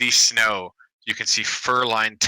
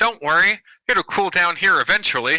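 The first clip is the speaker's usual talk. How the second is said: jovial, light-hearted, high joking bellow; 8 semitones higher, 4 dB louder than usual. A narrator voices a dwarf calling over the snow to a shivering traveler: Morgo Delwer's light-hearted bellow. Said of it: "a light-hearted voice that jokingly bellows".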